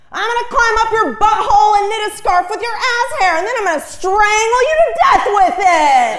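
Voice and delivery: high, loud, threatening yell.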